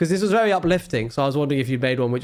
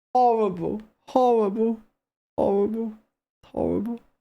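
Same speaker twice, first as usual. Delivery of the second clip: high, tearful voice crying through words; 8 semitones higher than usual. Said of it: "Now I'm sick and crying".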